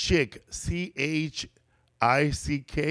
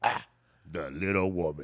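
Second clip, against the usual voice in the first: mock very low, disgusted man's voice, muttered; 9 semitones lower, 6 dB quieter than usual. Retelling a commercial where a man looks down at a woman, mock-disgusted. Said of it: "He's all disgusted".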